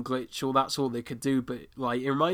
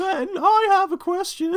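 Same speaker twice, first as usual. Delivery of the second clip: very high woman's voice; 3 dB louder than usual. Quoting a favourite line from the episode: imitating the woman's voice. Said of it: "It's this woman's voice".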